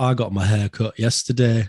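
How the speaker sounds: sarcastic, slowed down.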